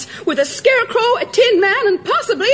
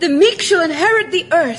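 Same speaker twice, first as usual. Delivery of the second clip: ordinary talk, nothing marked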